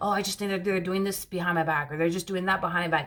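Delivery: ordinary delivery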